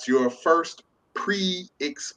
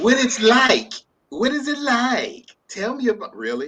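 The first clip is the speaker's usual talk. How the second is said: put-on very high-pitched little kid's voice; 10 semitones higher, 4 dB louder than usual. Speaker acting out what a child would ask, in a child voice. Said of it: "I'm about to go into my child voice".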